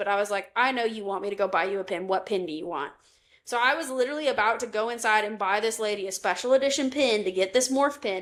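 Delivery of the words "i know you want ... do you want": mock sassy tone. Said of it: "I'm getting a little sassy".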